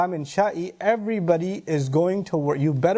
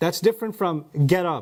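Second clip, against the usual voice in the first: ordinary delivery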